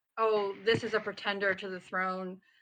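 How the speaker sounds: plain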